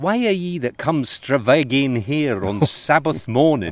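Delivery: put-on Scottish accent. Reading a character's line from a novel aloud: Scottish accent. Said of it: "Buchan tries to phonetically write out the Scottish accent".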